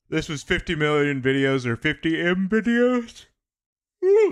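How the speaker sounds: talking through a yawn. Reacting to videos and remarking on a channel's name, yawning while talking. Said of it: "I can't stop yawning".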